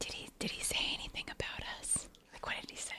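slow, very quiet, barely audible whisper. Asking another character in a game what was said about them: whispering. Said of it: "whispering to Alfie".

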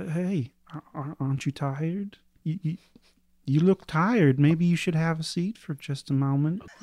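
very soft-spoken. A game master voices what a player hears after tapping a chair, very soft voice. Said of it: "you hear this very soft voice say".

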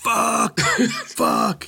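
high, loud, amazed swearing outburst.

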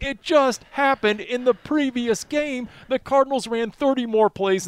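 very high, shrill, ranting screaming. Retelling watching a football game, the speaker reenacts screaming at the TV. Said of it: "I'm screaming at the TV saying".

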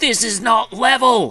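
put-on very high, loud yelling in terrible Scottish accent. Picturing Gordon Ramsay yelling at Tom Brady on a TV show, mock Gordon Ramsay yelling. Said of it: "I don't know why I made Gordon Ramsay Scottish".

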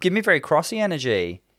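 bad New Zealand accent. Quoting a contestant's phrase: bad kiwi accent. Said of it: "That's not a Kiwi accent".

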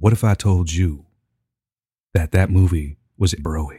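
low, slow, deliberate voice. Making a point about a movie in a put-on voice: Morpheus voice. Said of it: "Let me put on my Morpheus glasses".

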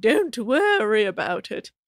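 put-on British accent. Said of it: "speaking in a British accent".

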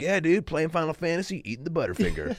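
frat bro voice. Retelling how an ad wanted a line read: fratty dude voice. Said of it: "like a fratty dude, just being like".

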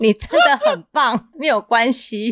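gentle, soothing, drawn-out voice. Retelling how the husband now comforts when upset: imitating husband. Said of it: "他就会".

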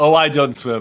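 put-on bone-dry, completely flat deadpan delivery. Retelling Todd's answer to a question: imitating Todd's deadpan delivery. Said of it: "And total deadpan".

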